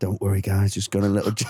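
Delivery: casual, relaxed, chatty tone. Retelling how a comedian talked to his props: imitating Tim talking to his props. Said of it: "he's talking to his props like".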